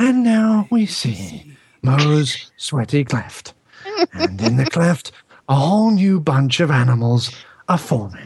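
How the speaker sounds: hushed, whispery narrator-style voice. Acting out a brother narrating into a mic, in a whispery narrator voice. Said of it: "with a very whispery mic going".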